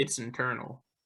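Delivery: put-on hushed, very quiet, very stern voice. Telling why a player sat out, quoting the coach's answer: imitating a stern voice. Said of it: "in a very stern voice".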